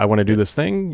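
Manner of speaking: usual speaking voice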